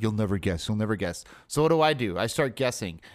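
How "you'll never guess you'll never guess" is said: put-on whispering. Retelling what someone kept saying during a movie: imitating someone whispering. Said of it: "kept whispering in my ear".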